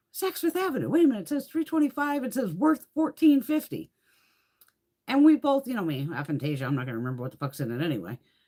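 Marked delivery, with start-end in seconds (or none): 0.1-3.9 excited, high-pitched exclamation. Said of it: "And then we both went".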